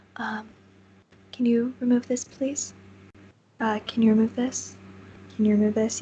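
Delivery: gentle, soft-spoken, hushed voice. Narrating a scene to listeners, voicing a speaker they hear, soft-spoken voice. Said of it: "you hear a soft-spoken voice".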